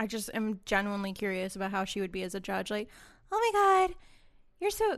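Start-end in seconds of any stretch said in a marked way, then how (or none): 3.3-5.0 clumsy, badly done, pitched-up soft girly voice. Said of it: "that's not a good [name] voice".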